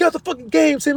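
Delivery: yelling in a very high register. Imagining a gamer's mom telling her son tim to quit the game; imitating a yelling mom. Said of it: "Their mom's probably yelling at them like".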